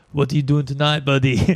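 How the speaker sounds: put-on heavy, laid-on, thick South American accent. Quoting a work buddy who came up at work, in a thick South American accent. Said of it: "he's got this like thick South, South American accent".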